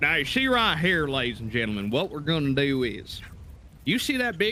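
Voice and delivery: thick, exaggerated, laid-on Southern drawl. Performing his made-up character Idjit, addressing ladies and gentlemen: Idjit's thick Southern drawl. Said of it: "a thick southern drawl".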